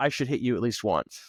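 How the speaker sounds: ordinary talk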